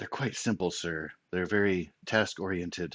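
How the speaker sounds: hushed, soft, confidential leaning-in stage whisper. Voicing a character who leans in and speaks aside: half-whispering in character. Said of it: "leans in and whispers".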